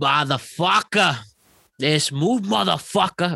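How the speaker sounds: Boston accent with a slack, loosened tongue. After explaining how to do the accents, demonstrating a Boston accent. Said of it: "And then Boston's just, let that tongue out".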